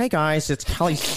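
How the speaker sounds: geeky, eager, nerdy vlogger-style voice. Trying an impression of the other speaker Kelly after being challenged: imitating Kelly. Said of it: "let me try".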